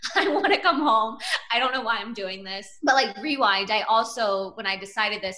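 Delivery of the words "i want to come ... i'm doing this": mock weepy, tearful crying voice. Retelling a call to parents after moving: retelling own crying. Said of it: "calling my parents crying".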